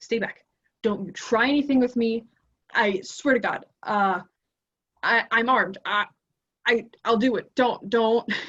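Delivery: frantic, panicked woman's voice, stuttering over words. Voicing a woman who jumps up and warns the players back: panicking woman. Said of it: "she seems to be just panicking".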